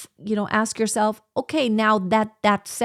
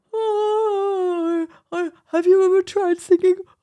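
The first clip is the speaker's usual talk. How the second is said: very high, very slow speech through a yawn; 9 semitones higher, 3 dB louder than usual. Showing what speech sounds like during an actual yawn: talking through a yawn. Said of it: "When you're actually yawning, it's like".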